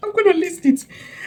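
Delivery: high-pitched laughing, resigned tone.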